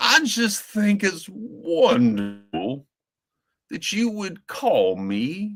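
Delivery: a very high-pitched, very slow Georgian aristocrat drawl. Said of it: "his whole persona around that voice".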